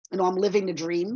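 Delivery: ordinary delivery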